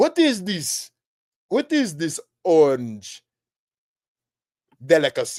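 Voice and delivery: swooping put-on Caribbean accent. Acting out people first tasting pumpkin at Thanksgiving, Caribbean voice. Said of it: "I don't know why I went into some Caribbean voice".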